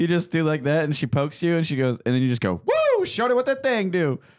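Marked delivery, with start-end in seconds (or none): 2.6-4.2 put-on shrill, swooping, very loud, high whooping holler. Acting out saying a line to a nurse during a shot: said really loud. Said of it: "And you said it really loud".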